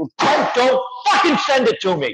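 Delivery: petulant hissy-fit outburst. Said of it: "I'm like".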